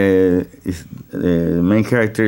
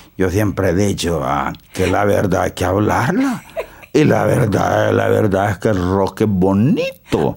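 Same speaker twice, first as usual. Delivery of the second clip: put-on old rustic peasant voice, "verdad" drawn out. Describing a farmer character who brings fruit to a radio station, countryside farmer voice. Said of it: "he talks like this".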